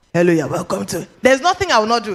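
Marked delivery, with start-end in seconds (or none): 0.2-1.1 put-on throaty, scratchy, croaky frog-like voice, lower. Retelling coming on air on radio, imitating own throaty, scratchy frog-like voice. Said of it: "like a frog".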